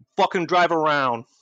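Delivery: menacing, loud, high, intimidating tone. A player speaks as their character, trying to intimidate a man: intimidating. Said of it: "try to intimidate him".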